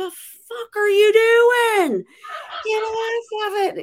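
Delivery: alarmed, very high, drawn-out shriek. Recalling being out in the new neighborhood: retelling a scream. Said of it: "out there screaming like".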